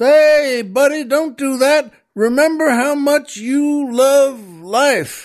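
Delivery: very high shout, projected upward. In a joke, the oil man calls up to a man about to jump: retelling a shout upward. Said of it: "the oil man shouts up".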